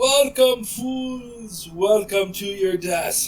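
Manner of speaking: loud booming voice. Narrating a tabletop game as a voice greets the players at a trapdoor, loud booming voice. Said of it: "this loud, booming voice".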